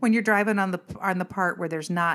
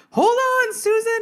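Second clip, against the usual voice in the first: shrill, very high-pitched, loud yell; 7 dB louder than usual. Retelling a school bus cutting in on the on-ramp, re-enacting the yell. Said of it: "and I'm yelling".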